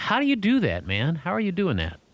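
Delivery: openly unconvinced, skeptical, doubting tone. Asking another speaker how they do it, skeptical tone.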